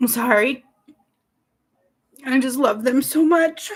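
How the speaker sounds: crying, tearful, emotional voice. Speaker on air apologizes to the guys, overcome, emotional crying. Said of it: "I'm just so emotional".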